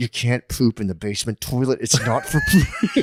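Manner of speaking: put-on seething through clenched teeth, swooping and rising. Imitating an aunt scolding a cousin: imitating gritted-teeth quiet rage. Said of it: "through the gritted teeth spa-, quiet spaz".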